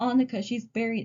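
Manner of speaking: plain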